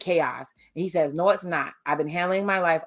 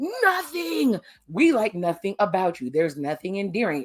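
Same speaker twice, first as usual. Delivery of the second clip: put-on sing-song screaming and yelling; 3 semitones higher than usual. Retelling a reaction to a show: imitating screaming at the TV. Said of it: "I'm screaming at T V like".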